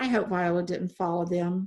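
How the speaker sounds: plain reading voice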